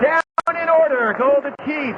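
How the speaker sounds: excited, loud shouting.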